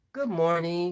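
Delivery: put-on sweet, soothing tone. Retelling someone's morning greeting over coffee: imitating a sweet, soothing voice. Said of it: "it was all that whole sweet".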